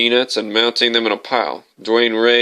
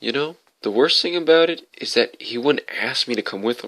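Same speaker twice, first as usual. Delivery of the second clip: quieter, softer voice; 5 dB quieter than usual. Reading a story, the narrator quotes a woman speaking to the narrator: quieter voice. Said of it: "said to me in a quieter voice".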